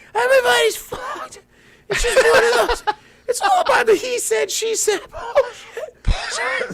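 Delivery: breathless shout. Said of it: "he's out of breath".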